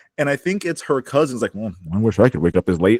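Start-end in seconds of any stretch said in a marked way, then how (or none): 1.5-3.0 put-on quiet mutter, lower. Retelling a cousin's remark at a family meeting: imitating someone muttering under breath. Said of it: "Like, under her breath".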